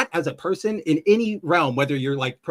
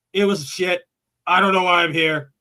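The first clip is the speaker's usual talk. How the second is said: put-on crotchety, grumbling voice. Retelling what an actor says in an interview: crotchety Harrison Ford impression. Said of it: "he's so crotchety".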